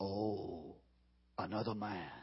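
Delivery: put-on very deep, near-silent, sinister, menacing voice. Retelling how a possessed man greeted a pastor: retelling in an evil tone. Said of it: "with an incredibly evil tone".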